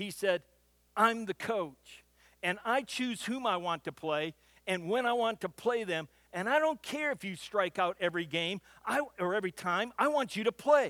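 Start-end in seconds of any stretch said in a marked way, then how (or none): none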